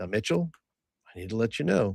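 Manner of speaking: steady, very calm, soft, even, measured tone. Speaking in character to mitchell, who is unaware of what's happening: very calm tone. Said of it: "talk to him in a very calm tone".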